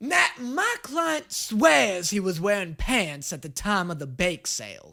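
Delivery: put-on small-time Louisiana lawyer accent. Pretending to be a small-time Louisiana lawyer, in a put-on Louisiana lawyer accent. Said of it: "pretend to be a small-time Louisiana lawyer".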